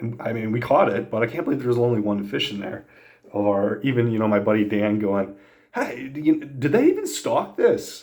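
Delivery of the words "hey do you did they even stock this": put-on full, rich, sing-song, pitched-up Pennsylvania accent. Recalling a fishing outing, quoting his buddy Dan: Dan's rich Pennsylvania accent. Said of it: "in his rich Pennsylvania accent".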